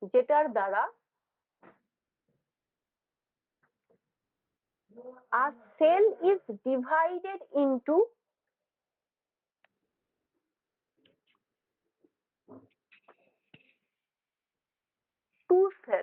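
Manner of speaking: slow, unhurried delivery at a dictation pace. Teacher repeating a definition so students can write it down: slow dictation. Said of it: "আস্তে আস্তে আমি repeat করছি".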